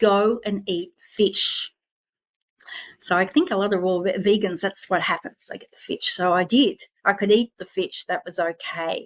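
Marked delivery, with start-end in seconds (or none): 0.0-1.7 slow, deliberate, measured inner-voice delivery. Retelling a voice that came through while on the floor: imitating a very loud voice. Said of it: "this voice came through very loudly".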